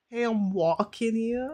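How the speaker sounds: loud, brash, put-on New York street accent. Joking about a friend hiding his accent: imitating a new york accent. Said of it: "I can hear the little bit of the New York".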